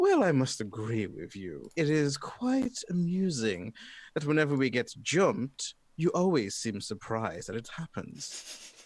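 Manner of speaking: amused laughing speech, high and swooping. A game master voices a laughing figure answering the party: laughing while talking. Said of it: "they're just laughing and saying".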